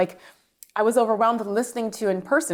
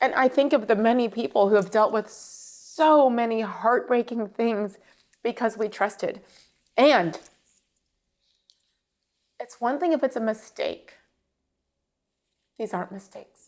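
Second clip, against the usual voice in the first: speaking through tears. After thanking David, the speaker breaks down mid-answer: crying while talking. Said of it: "why am I crying?".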